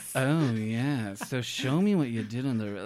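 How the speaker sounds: slow, drawn-out, mock-sultry drawl. Imitating a judge's put-on manner: imitating Jeffrey's faux sultry voice. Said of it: "faux sultry thing".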